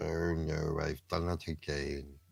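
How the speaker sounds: put-on cartoon dog voice. Asking friends to name a cartoon character, the speaker quotes it in a Droopy voice. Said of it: "What was that cartoon character that used to go?".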